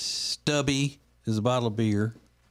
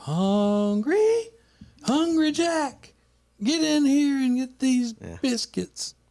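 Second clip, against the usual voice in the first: put-on old woman hollering, very high and drawn-out; 4 dB louder than usual. Retelling an old commercial: imitating an old woman yelling. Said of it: "you would just hear this old woman yelling like she's on the farm".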